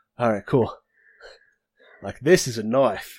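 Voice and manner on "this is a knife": put-on Australian accent. Speaking in character as Jameson, holding up a knife: Australian accent. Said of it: "he has to have that accent from now on".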